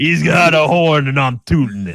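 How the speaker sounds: put-on New York accent. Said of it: "the most New Yorker I think I've ever heard you sound".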